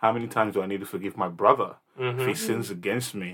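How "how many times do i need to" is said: plain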